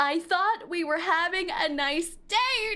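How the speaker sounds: acted-out shouting. Recapping a scene where a woman stands up on a date: retelling a yell. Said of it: "starts yelling".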